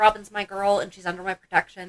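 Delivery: ordinary talk, nothing marked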